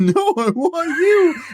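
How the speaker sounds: very high-pitched, loud, slow, drawn-out squeaky voice. Saying a character's line as another speaker suggested: Ralph Malph voice. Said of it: "Now picture Ralph Mouth saying it".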